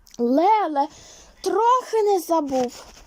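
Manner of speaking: abrupt, sudden, high burst of outcry. Narrator reading a character's line as he rushes to unwrap a parcel: sudden exclamation. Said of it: "зненацька вигукнув Костянтин Іванович".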